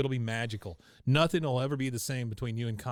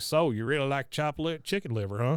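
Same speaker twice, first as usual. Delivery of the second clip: rural, countrified, country-sounding way of talking; 3 semitones higher than usual. Quoting a deli owner from the show: Carl's countrified voice. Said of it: "he's so countrified sounding".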